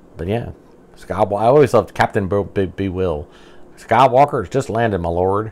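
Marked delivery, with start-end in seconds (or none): 3.8-5.5 very heavy put-on Southern drawl. Going through Star Wars figures, quoting a Bespin guard captain in a very southern drawl. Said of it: "he got a very, very southern drawl".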